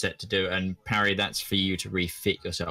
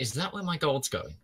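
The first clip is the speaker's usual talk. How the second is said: high-pitched, sideways half-whisper; 6 semitones higher, 3 dB quieter than usual. A player's character turns to Elric and asks him a question, half-whispering. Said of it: "turn to Elric and just whisper".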